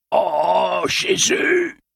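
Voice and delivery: choked, gasping, panting, very high strangled scream. Shot in the chest, a man cries out: strangled, panting scream. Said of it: "hurla Chimo Dretto d'une voix étranglée, haletante".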